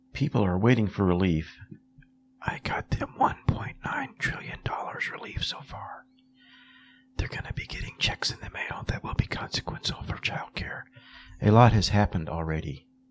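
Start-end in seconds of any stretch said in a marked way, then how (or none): 2.4-10.9 hushed, breathy whisper all the way through. Imitating Joe whispering at reporters at a press conference: imitating Joe Biden whispering. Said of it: "Why are we whispering?".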